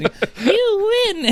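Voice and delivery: tiny, squeaky, very high voice, drawn-out "you". Retelling a film fight where the man kneed in the groin speaks, really high-pitched voice. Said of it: "in like a really high pitched voice".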